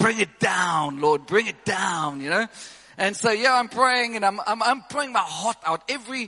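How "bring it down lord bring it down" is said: slight, slow, put-on German accent. Retelling his prayer, trying to sound like a German preacher; imitating Reynard's German accent. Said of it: "do a bit of a German".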